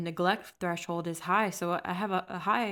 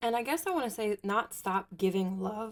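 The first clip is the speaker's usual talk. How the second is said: voice cracking mid-sentence; 3 semitones higher than usual. Explaining what you want to say, then having to excuse yourself, voice cracking. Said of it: "Voice crack".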